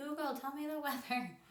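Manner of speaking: high, loud, calling-out yelling. Showing how they talk to voice assistants: imitating own yelling. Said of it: "I feel like I'm yelling".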